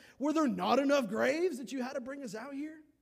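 mock, very high, very loud, sassy sarcastic tone. Retelling the people's complaint to Moses: imitating a sassy, sarcastic retort. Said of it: "They're getting sarcastic with Moses".

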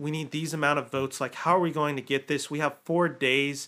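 ordinary talk, nothing marked

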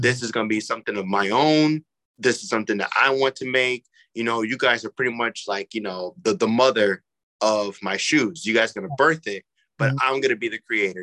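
ordinary talk, nothing marked

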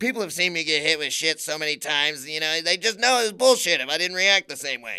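loud, dazed, out-of-it rambling. Retelling what a stuntman said about reacting, Steve-O impression on ketamine. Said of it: "best Steve-O impression of him on ketamine".

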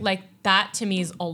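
ordinary delivery

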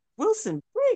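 very high, mock outraged shriek.

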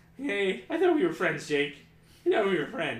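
loud, high crying, voice breaking and cracking. Upset at not being recognized by a friend, crying with a cracking voice. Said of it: "the voice cracking's ruining the mic".

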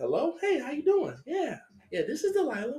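very high, polite, sing-song phone voice. Retelling how the speaker's mom answered a phone call, imitating mom's phone voice. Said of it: "So at one time she got a phone call".

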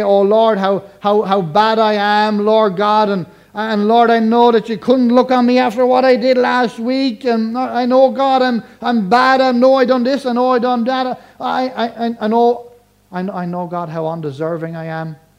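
mock fearful pleading, high, stammering, tripping over words. Imitating how some people pray in a fearful way: mock fearful praying. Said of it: "They pray in a kind of way".

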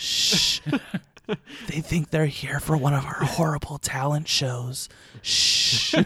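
playful, joking hushed stage whisper with shushing. Joking that fans are right outside, pretend whisper. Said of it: "we have to whisper".

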